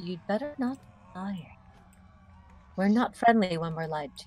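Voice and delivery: very quiet, hushed, said under the breath. Role-playing, the speaker's character walks over to warn another character: very quiet. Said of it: "very quietly say to him".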